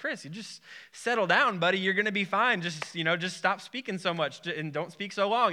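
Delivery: plain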